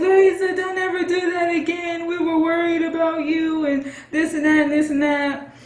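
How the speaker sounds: mock weepy, tearful, high-pitched begging voice. Retelling what the aunt said after the police car door opened: imitating a crying aunt. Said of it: "and she's crying".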